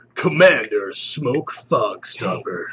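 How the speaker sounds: dramatic, deep movie-trailer announcer voice. Reading out a product's name in a movie announcer voice. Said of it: "You make everything sound cool when you talk like that".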